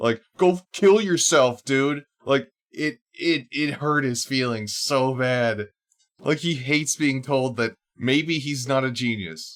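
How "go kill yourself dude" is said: furious, shrill, loud screaming. Retelling how someone screamed at the speaker: imitating someone screaming. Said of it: "he is fucking screaming at me".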